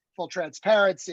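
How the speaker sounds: ordinary talk, nothing marked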